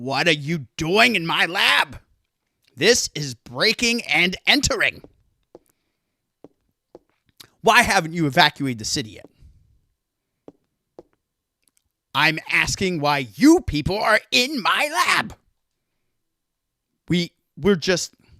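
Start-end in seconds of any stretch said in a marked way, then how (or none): 0.0-15.3 evil scientist voice, played fully over the top. Voicing the professor Klamp confronting people in his lab: Klamp evil scientist voice. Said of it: "I get to go full evil scientist now".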